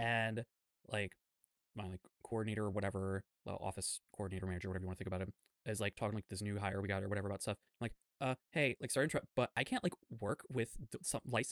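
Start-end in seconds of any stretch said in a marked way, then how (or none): 8.5-11.5 mock stammering in a higher voice. Speaker retells interrupting an office coordinator about work, imitating own stammering. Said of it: "I was just stammering".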